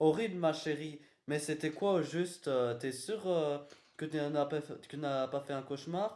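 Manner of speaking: usual speaking voice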